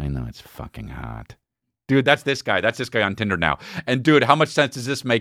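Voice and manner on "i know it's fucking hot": slow, hushed mutter under the breath. Retelling a man's reply to the speaker after his wife's warning, muttered under his breath. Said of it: "under his breath".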